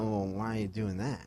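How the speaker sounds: disbelieving, skeptical, doubting tone. Imitating a stranger questioning daily vlogging: imitating that doubting voice. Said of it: "that same voice".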